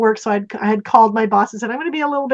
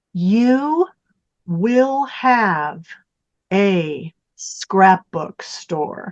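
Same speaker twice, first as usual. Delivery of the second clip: huge, room-filling, disembodied, proclaiming voice; 3 semitones lower than usual. Retelling a voice that spoke in her living room, imitating a big voice. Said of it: "this big voice in my living room goes".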